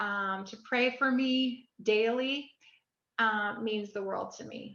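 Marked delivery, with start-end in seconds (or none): none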